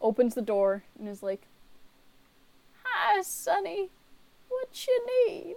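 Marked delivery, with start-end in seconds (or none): 2.8-5.6 put-on very high, very slow, breathless frail old lady. The game narrator voices an old woman opening the tower door, frail, out-of-breath old woman. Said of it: "A frail old woman who's completely out of breath".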